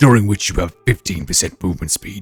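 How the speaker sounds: loud public announcer voice.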